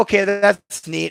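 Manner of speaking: unimpressed, sarcastic tone. Retelling a reply to a woman explaining protective angels, retelling a sarcastic reply. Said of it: "I'm being sarcastic with her".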